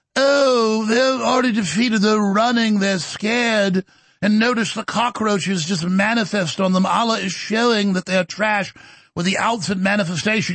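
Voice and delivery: put-on British accent. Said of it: "listen to this guy in his British accent".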